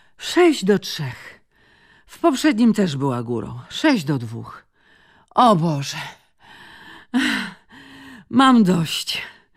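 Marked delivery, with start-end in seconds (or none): 5.3-9.2 out of breath, panting. [name], losing a tennis match to Gemma, panting. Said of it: "wydyszała [name]".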